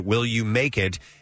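ordinary talk, nothing marked

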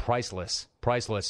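plain

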